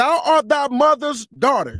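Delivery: very slow reading, each word drawn out.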